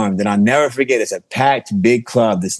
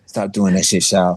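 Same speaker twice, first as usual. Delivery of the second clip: put-on quiet, hushed, polite voice; 3 semitones lower than usual. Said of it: "so quietly and respectfully and politely".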